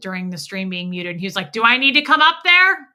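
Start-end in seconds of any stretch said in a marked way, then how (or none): 1.5-2.8 loud, high-pitched yelling. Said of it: "he yelled".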